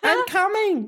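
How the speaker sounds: very high-pitched character voice. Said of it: "do the Gamatotsu voice".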